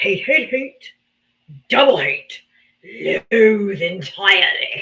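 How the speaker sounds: low, slow, drawn-out character voice. Showing a hate of Donald Trump in a Grinch voice. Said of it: "I'll say it like the Grinch".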